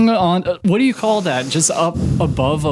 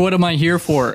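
ordinary talk

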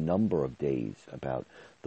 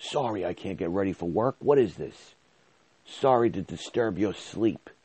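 put-on mean, obnoxious, high yelling; 5 semitones higher, 3 dB louder than usual. Retelling how a coworker's husband yelled at her: imitating husband yelling. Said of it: "he started yelling at her".

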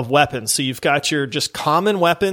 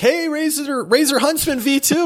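high, raised, loud calling shout; 11 semitones higher than usual. Retelling shouting at a buddy who complained about his keyboard: retelling own shout.

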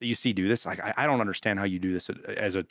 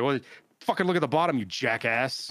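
loud, barking drill-instructor style delivery; 4 semitones higher than usual. Answering people who ask that question, in a drill instructor voice. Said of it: "It's like the drill instructor comes out".

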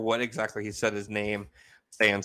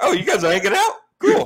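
much higher, louder oblivious vibing guy voice. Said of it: "He's like".

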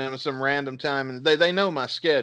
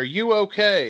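freaked-out, panicked, pitched-up voice; 6 semitones higher than usual. Retelling a phone call from mom at work: imitating mom freaking out. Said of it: "She's, like, freaking out".

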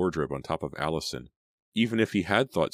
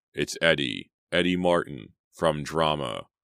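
plain reading voice

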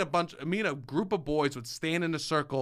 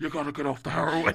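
put-on, imitated whisper. Acting out a scene about quitting heroin: imitating Tony Soprano whispering. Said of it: "he would whisper into the mouth".

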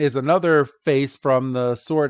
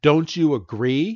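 put-on pushy tone. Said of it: "being a dick saying it the way he's saying".

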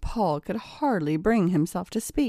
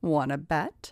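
ordinary delivery

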